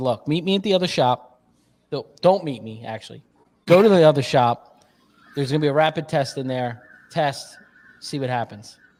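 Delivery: plain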